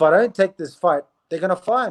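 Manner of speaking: ordinary talk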